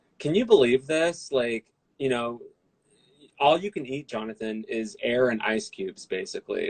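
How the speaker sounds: ordinary delivery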